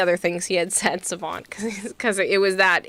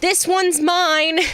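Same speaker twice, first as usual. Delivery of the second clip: very high, high-pitched yell at nearly full lungs; 10 semitones higher than usual. Retelling how a man lifted the speaker's arm and yelled: retelling a yell. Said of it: "He yelled and went".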